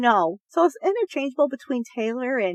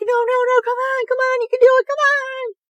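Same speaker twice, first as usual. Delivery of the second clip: play-acted very high, loud, shrill, freaking-out screaming; 13 semitones higher, 5 dB louder than usual. Retelling screaming at the TV for a contestant: imitating herself screaming. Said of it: "I was screaming at the T V".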